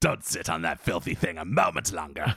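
painful straining acted voice. Quoting a line about the executive washroom, strained painful impression. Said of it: "I take pride in that impression".

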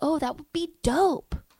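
put-on girly voice, pitched high. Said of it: "And she's like".

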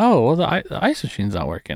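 acted-out offhand, breezy, sing-song nonchalance. Retelling what Carrie said about the ice machine: imitating a nonchalant tone. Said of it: "a nonchalant".

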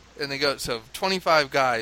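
ordinary talk, nothing marked

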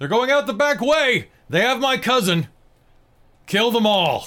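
shouting. As soldiers pour into the room, a character shouts down the hall. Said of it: "you will hear Akario just shout".

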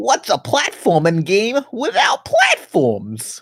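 very high, sing-song, swooping cartoon bobcat voice. Listing more of his taglines, the speaker does a Bubsy impression. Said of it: "What else does Bubsy say?".

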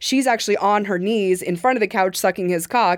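plain

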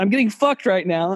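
ordinary delivery

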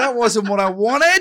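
mock disappointed fan voice.

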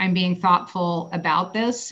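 ordinary talk

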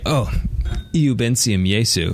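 ordinary delivery

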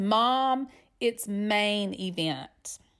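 irritated, dead serious, very slow and drawn out. Mother retells her son correcting her, mimicking him dead serious. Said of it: "looks at me dead serious, no smile".

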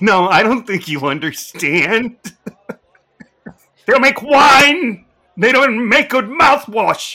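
shrill, high, loud voice. Talking to Sean about wine, the speaker does a Donald Pleasence impression. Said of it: "That's my Donald Pleasant imitation from Columbo playing the wine guy".

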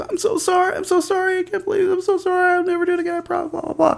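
very high sobbing, crying, screaming. Retelling a friend caught stealing and apologizing, imitating Lisa crying, screaming. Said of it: "She's crying, she's screaming".

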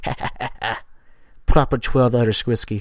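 hushed, breathy, whispered little ha-ha-ha laugh. Retelling a whiskey commercial: Conor McGregor laugh. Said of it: "his little Conor McGregor laugh".

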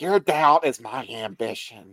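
put-on breathy, woman's voice. Imitating a woman's weird way of speaking, in a breathy voice. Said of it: "Breathy right".

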